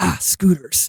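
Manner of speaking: muttered under the breath. Recounting a movie chase scene, quoting the star: imitating Tom Cruise muttering under breath. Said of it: "like under his breath".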